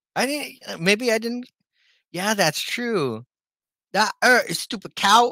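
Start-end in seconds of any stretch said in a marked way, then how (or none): 3.9-5.3 put-on loud, thick, heavy Cockney accent. Quoting a monster's line from something they saw, in a heavy Cockney accent. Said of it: "heavy, like, um Cockney accent".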